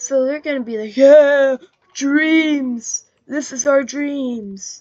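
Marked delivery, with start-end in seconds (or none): 1.0-4.8 loud, slow, wild, unhinged crazy drawl. Acting out what they will say to the Persians, crazy voice. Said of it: "in that crazy voice".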